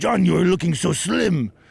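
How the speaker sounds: creaky, gushing, infatuated, adoring voice. Retelling praise from an older gym friend: imitating Rodrigo. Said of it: "he goes".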